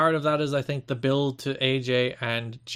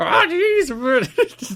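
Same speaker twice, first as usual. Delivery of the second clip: put-on nervous cartoon teen voice, higher and louder; 12 semitones higher, 8 dB louder than usual. Joking about an impression turning into Morty: Morty voice. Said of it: "Jimmy Hart as Morty".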